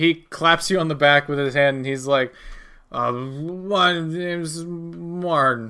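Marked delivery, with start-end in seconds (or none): 2.9-5.7 put-on drunk voice with drawn-out my. In a persuasion role-play, a player acts a bar patron introducing himself in a drunk voice. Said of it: "you sound like you're pretty drunk".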